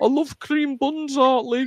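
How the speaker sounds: very high-pitched Brummy pig voice. Recalling a TV pig's catchphrase, in Pig's Brummy accent. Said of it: "in a Brummy accent".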